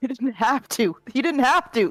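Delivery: shouting. Answering the other character in a drama scene, yelling. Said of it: "I'm yelling".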